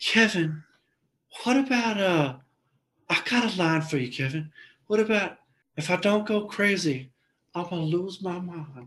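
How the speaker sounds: put-on polite old man voice. Retelling what Gary said to Kevin, imitating Gary's voice. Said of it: "So Gary talks like that".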